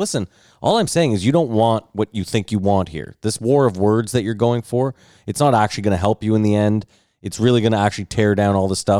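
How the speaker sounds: normal talking voice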